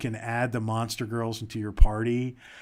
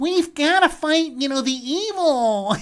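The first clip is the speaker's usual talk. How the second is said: put-on very high, loud, effeminate teenage-boy voice; 8 dB louder than usual. Mocking a game's main character voice actor: imitating an effeminate teenage boy voice. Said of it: "sounds like an effeminate teenage boy".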